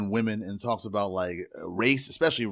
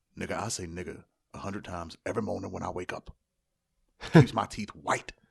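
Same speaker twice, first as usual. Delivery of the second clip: put-on deep, deadpan voice; 3 semitones lower than usual. Retelling a movie scene, the speaker gives Paul Mooney's answer: deep deadpan Paul Mooney voice. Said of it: "with his deep ass voice and his deadpan face".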